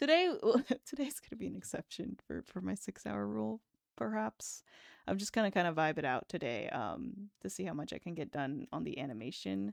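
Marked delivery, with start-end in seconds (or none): 0.4-4.6 soft, quiet, hushed aside, half to oneself. Taking a wrist rest from drawing, the speaker plans the day, speaking quietly.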